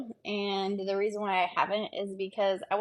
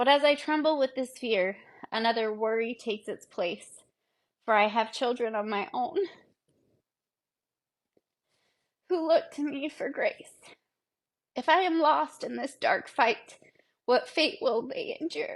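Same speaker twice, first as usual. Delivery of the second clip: choked up, holding back tears, higher; 3 semitones higher than usual. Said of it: "if I get a little choked up".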